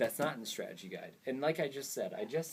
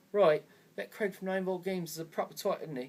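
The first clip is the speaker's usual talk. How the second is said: horrible put-on British accent, pitched up; 8 semitones higher, 4 dB louder than usual. Imitating how a hater in Britain would say it: horrible British accent. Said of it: "I'm sorry if that was a horrible accent".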